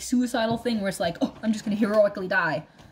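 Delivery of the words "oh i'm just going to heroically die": ordinary delivery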